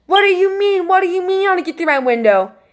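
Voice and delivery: put-on, frantic, high, panicked scream. Retelling a scary night, imitating her own scream: imitating her own scream. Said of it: "And I scream".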